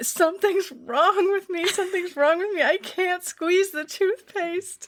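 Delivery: put-on tearful crying, very high-pitched, complaining. Retelling how someone came in crying the day after rock climbing: imitating someone crying. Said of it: "and she's crying".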